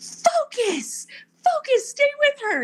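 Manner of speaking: mock, very high, shrill, swooping screaming. Retelling others screaming race advice: imitating people screaming. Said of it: "they were screaming".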